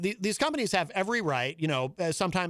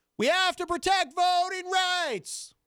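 put-on shrill, loud, high old-man yelling; 12 semitones higher than usual. Speaker acts out the yell of an old man who doesn't realize he's yelling: mock old-man yell. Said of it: "It's the I'm deaf and I don't realize I'm yelling kind of yell".

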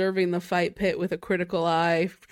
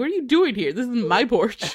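sassy, cheeky delivery; 5 semitones higher than usual. Retelling what Zoe said on finding him at her tent: imitating Zoe with sass. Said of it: "she had a little sass in it".

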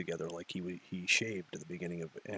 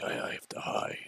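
breathy, slow, quiet whisper. Describing how the Hulk acts in the earlier movies: imitating the Hulk. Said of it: "who's like".

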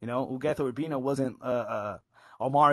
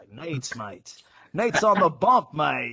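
loud, jokey put-on Australian accent; 2 semitones higher, 5 dB louder than usual. Talking about how a Marlins bullpen pitcher sounded, put on a UK or Australian accent. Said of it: "he sounded like he was like from the UK or Australia".

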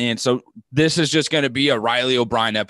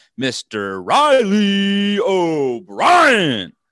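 big, pitched-up, swooping announcer voice; 8 semitones higher, 4 dB louder than usual. Welcoming someone back by name, in a put-on announcer voice. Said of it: "I had to get that little announcer voice in there".

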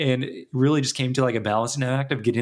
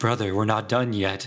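mock whispering; 3 semitones lower than usual. Retelling how a game boss whispers to his fallen brother: imitating a whisper. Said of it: "whisper in his ear and be like".

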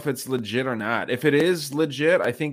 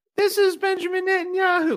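put-on very high puppet child voice. Retelling how a man holding a net talked, in a kid puppet-show voice. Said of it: "he was literally doing like a kid voice, like a puppet show".

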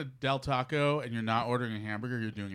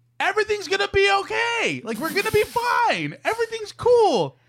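mock consoling tone, higher and louder; 10 dB louder than usual. Retelling own way of consoling a partner, imitating own loud consoling tone. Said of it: "What does that tone really p-".

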